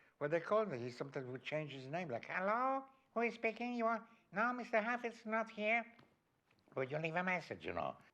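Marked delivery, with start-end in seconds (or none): 2.3-7.6 put-on heavy Chinese accent, much higher, slower. Act out how he would answer the phone disguised, in a put-on, very chinese accent. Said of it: "a very Chinese dialect".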